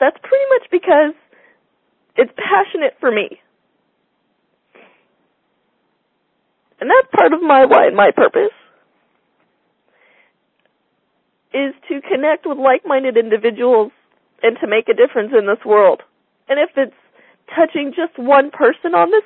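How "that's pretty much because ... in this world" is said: choked-up voice catching with emotion. Speaking to people on a call, choked up. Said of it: "I'm pretty choked up on this call".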